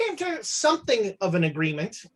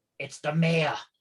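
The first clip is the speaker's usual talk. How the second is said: muttered quietly under breath, lower; 4 semitones lower than usual. Voicing a bartender as a well-dressed stranger walks in: under his breath. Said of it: "under his breath goes".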